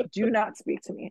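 put-on flat, deadpan child voice. Retelling what her young daughter said to strangers: imitating a deadpan child. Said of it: "blank face".

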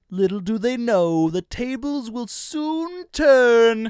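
very high, shrill, loud cartoon voice. Asked to redo the voice they played in SpongeBob, doing the Plankton voice. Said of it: "What did you do a voice for Plankton?".

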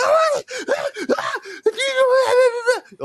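frantic, panicked, very high, drawn-out voice. Retelling how a mother reacted to the injury: imitating panicked mother. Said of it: "my mom's, like, freaking the fuck out".

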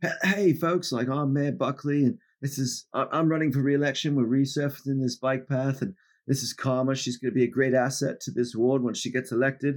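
put-on high Australian accent. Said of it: "Australian accent".

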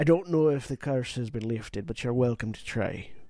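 Scottish-sounding voice. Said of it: "As I get the correct accent back".

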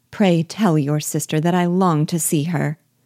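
plain reading voice

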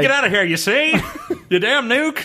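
put-on high, old-timey nineteen-thirties voice. The speaker pictures someone facing down an incoming nuke, in a 1930s voice. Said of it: "nineteen thirties voice".

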